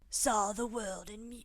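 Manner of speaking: put-on British accent. Reading a line as the Countess, in a British accent. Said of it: "I hate going into that accent".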